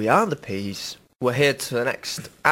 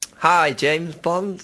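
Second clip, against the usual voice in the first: Yorkshire accent, a touch higher in pitch; 5 semitones higher than usual. Friends debating who would make a good Bond, in a James Bond attempt, still Yorkshire. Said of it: "still Yorkshire".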